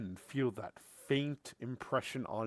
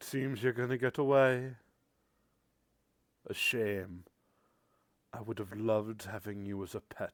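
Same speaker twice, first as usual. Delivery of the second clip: voice dying away to nothing. Voicing a villain's presence as it fades away: final fading voice. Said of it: "This final fading voice".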